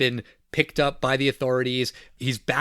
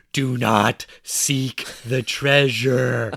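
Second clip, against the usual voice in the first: slow, loud stage whisper; 3 dB louder than usual. Recapping a film, speaker retells a captured man's line in the theater: retelling a loud stage whisper. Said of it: "he's just whispering, quote unquote, very loudly".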